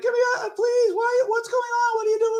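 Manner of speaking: very high, tearful, crying, pleading voice. Retelling a crying girlfriend's plea from an episode: imitating someone crying. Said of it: "And she's crying".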